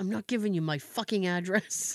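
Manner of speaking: acted-out muttering under breath. Retelling an old man's question, imitating someone muttering under his breath. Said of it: "Jay under his breath goes".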